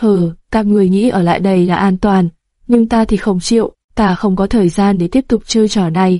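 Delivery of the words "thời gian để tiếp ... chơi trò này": ordinary delivery, nothing marked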